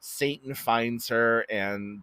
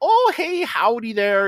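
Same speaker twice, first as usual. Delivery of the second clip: put-on very loud, very high Minnesota Midwestern accent; 13 semitones higher, 8 dB louder than usual. Quoting the mom's greeting from a scene she describes, Minnesota midwestern accent. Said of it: "like that Minnesota uh kind of like midwestern accent".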